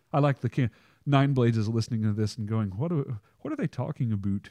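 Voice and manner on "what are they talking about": poor fake Canadian accent, higher, slower. Imagining Nine Blades listening to this and reacting, in a bad Canadian-accent Nine Blades impression. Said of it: "I don't have a good Canadian accent".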